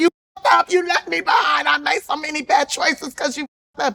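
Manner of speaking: mock drunken tearful voice. Retelling calling a father late at night: imitating drunk crying. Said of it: "I would call him drunk as hell, crying".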